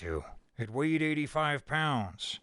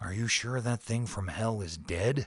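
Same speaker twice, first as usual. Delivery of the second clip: soft character voice, much lower; 5 semitones lower than usual. Narrator reads a doctor's question to a biologist: asked softly. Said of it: "His feet were fading echoes in the corridors as [name] bent unhurriedly over the little man on the floor. / His feet were fading echoes in the corridors as [name] bent unhurriedly over the little man".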